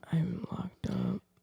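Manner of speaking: mournful, soft, low, deep-register sad voice. Recalling an improv scene, the speaker redoes the line in a put-on sad voice. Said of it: "make my voice sound like I was really sad".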